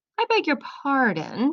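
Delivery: sniffy, drawn-out, disdainful. Narrator reading the Rat's reply to Toad, slow and sniffy. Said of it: "said the rat slowly".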